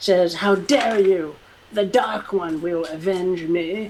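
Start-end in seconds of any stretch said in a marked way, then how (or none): 0.3-2.3 agonized, shrieking scream of pain. Narrating a fight, voicing a character who just lost an arm, shrieking in agony. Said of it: "she shrieks in agony".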